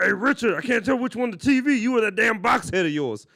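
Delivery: very high, loud, shrill, squealing silly voice. Retelling an old classroom joke aimed at a teacher: stupid put-on voice. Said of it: "that was a voice I used to do".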